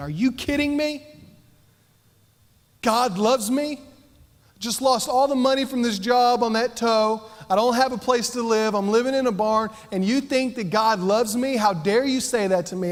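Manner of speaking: sudden, high, furious outburst of rage. Retelling blowing up at mom in the car: imitating own angry outburst. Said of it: "I blew up. I was so mad".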